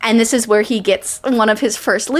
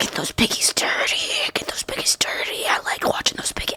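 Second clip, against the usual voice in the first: disgusting, gross creature voice in a breathy whisper; 8 dB quieter than usual. Imitating an audiobook villain while describing a kill scene: disgusting creature voice. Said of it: "You have to get into character?".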